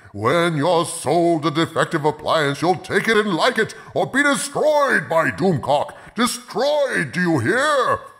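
high, furious, bottomless supervillain rage. Doomcock answers a customer service call about a dented washing machine, in furious rage. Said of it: "Doomcock's power lies in his bottomless well of rage".

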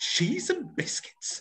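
very high, shrill, outraged cry. Coaching a group to get outrage into their voices, speaker demonstrates in an outraged voice. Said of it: "let me hear you".

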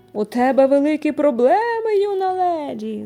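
loud, rising, bellowing roar. Mink scolds Meilin, roaring. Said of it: "заревіла Мінк".

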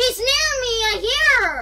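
very loud, high, agitated, panicked voice. Playing a game on stream and hearing someone close by, panicked. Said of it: "calm down".

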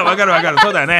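loud, laughing, cooing, soothing, humoring tone.

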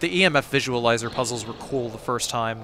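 ordinary delivery

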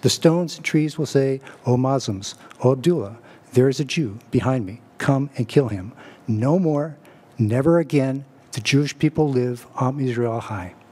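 ordinary delivery

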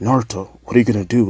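ordinary talk

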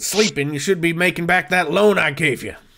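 fast, menacing put-on loan shark voice.

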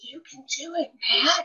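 soft, slow, drawn-out, high whisper. Reading a book scene aloud, voicing a character's line: whispering. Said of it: "here's Hondo whispering".

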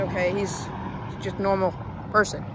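ordinary talk

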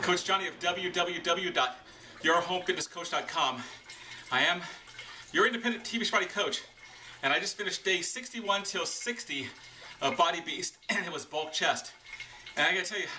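winded, breathing hard between words. A fitness coach recording a video just after finishing a workout, out of breath. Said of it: "I'm breathing hard because I just finished".

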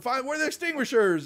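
shrill, high, loud yelling. Voicing a marshal as a fire alarm goes off: yelling. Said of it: "he starts yelling".

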